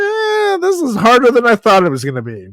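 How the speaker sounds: high whine.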